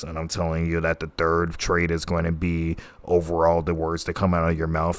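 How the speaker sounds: very monotone, lifeless, low, soft drone. Showing viewers how a monotone speaker loses their attention, very monotone voice. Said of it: "I'm talking in a very monotone voice".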